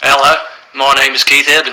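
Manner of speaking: best-attempt put-on Australian accent. Speaker tries out their best accent, introducing themselves in an Australian accent. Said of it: "My best Australian accent".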